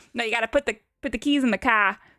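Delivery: put-on Boston accent. Asked where they picked up the accent, answering in a Boston accent. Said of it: "My Boston accent".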